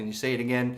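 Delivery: ordinary delivery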